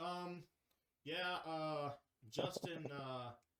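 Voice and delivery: very slow, halting stammer, stumbling over fillers. Imitating a coach in a press conference: imitating Mike McDaniel stammering. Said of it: "Mike McDaniel's gonna be like".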